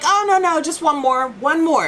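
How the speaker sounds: put-on insistent tone. Retelling what he said when he wanted just one more photo, acting out insistence. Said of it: "He was insistent".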